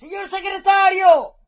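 very loud, shrill, high shout. Narrator reads Weiss calling a second time after the running secretary, shouting. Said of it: "urlò stavolta Weiss".

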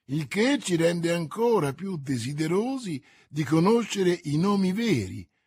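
ordinary delivery

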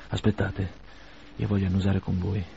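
ordinary delivery

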